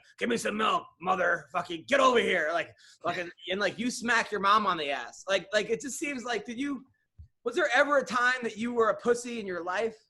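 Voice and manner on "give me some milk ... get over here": put-on tough-guy baby voice. Picturing a newborn coming out of the womb: imitating baby Don Frye. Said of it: "a baby Don Fry coming out of the womb".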